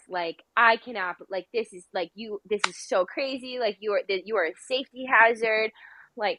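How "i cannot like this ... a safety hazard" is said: plain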